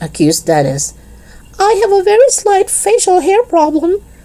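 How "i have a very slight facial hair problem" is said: very high-pitched, put-on, ladylike woman's voice. A disguised man answers the children's accusation: high-pitched reply. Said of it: "was the high-pitched reply".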